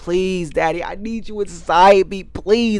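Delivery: put-on begging, pleading tone, high pitched. Describing an intimate moment, the speaker imitates a woman begging him. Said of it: "and she's begging".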